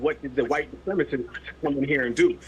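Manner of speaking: ordinary talk, nothing marked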